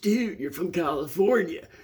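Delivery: laid-back California surfer voice. Retelling what a guy renting out skates said to him, in surfer voice. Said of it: "he said it in that that surfer voice".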